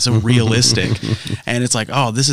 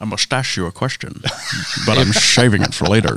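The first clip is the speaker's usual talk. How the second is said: put-on Scottish accent. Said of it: "Bane or Sean Connery".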